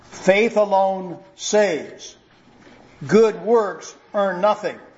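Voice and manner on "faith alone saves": each word said very slowly and clearly. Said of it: "Say it one more time, slowly, clearly".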